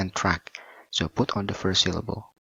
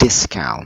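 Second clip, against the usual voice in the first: "discount" with stress on first syllable "dis"; 9 dB louder than usual. Word stress lesson on two-syllable words: stress on 'dis' in discount. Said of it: "So we put on the first syllable".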